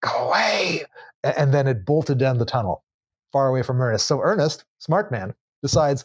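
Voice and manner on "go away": beastly, hissed creature voice. Retelling how a creature hissed at Ernest, in a hissing creature voice. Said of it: "apparently it hissed at him".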